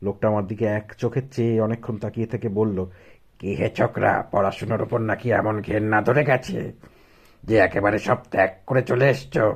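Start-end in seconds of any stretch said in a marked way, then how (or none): 3.4-9.6 harsh, grating, rasping character voice. A narrator reading a story, voicing a man who questions the young narrator, harsh voice. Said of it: "এরকম কর্কশ গলা".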